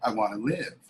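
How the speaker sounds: frail, feeble voice, words barely got out. Retelling the mother's answer when asked if she wants to live: imitating a frail voice. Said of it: "with a frail voice and she got out".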